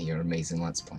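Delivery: sarcastic, put-on admiring, mock praising tone. Praising a co-host's let's play: sarcastic. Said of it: "That was a sarcastic".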